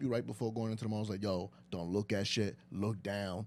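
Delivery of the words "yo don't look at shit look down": measured, deliberate motherly tone. Retelling a parent's warning before going into the mall: imitating mom. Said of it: "every time you talk like your mom".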